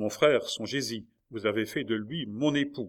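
ordinary delivery, nothing marked

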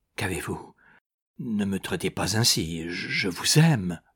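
murmuring. Rebuked by the woman, he rises and speaks to her, murmuring.

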